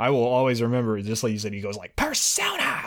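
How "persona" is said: acted furious yell, very high pitched. Recalling how the voice actor yelled in that battle: mock-angry shout. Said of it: "he just sounds so angry".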